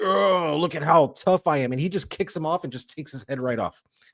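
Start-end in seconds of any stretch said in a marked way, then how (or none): 0.0-1.7 brute voice, boastful, high, drawn-out taunting yell. Retelling a film fight where the Uruk-hai taunts Aragorn: imitating an Uruk-hai yelling. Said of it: "yelling at him".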